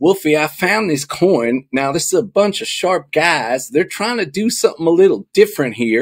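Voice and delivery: imitated Southern accent. Retelling a friend's message about a coin: imitating a friend's Southern accent. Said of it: "he has that Southern accent".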